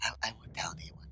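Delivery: very quiet, soft whisper, barely audible. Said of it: "he'll whisper".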